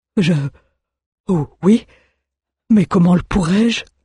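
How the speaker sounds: stammering, stuttering, incredulous delivery. Almar answers his master's order, stammering, incredulous. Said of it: "Balbutia Almar, incrédule".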